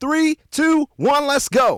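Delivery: very high, loud hype-man MC voice. Explaining how a DJ's voice builds anticipation before a drop, hype DJ countdown. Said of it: "builds anticipation before a drop".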